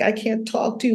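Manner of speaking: high, tearful, weeping voice. Retelling a mother's words in a tearful talk, imitating someone crying. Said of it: "And she was crying, like".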